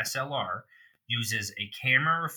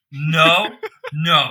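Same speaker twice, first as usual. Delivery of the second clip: loud, rising voice; 5 semitones higher, 12 dB louder than usual. Reacting to a question about a camera advertisement: getting loud. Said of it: "I'm sorry for getting loud".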